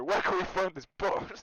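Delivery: really aggressive, very loud tone. Echoing what the others just said, in a really aggressive tone. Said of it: "I want to echo that in a really aggressive tone".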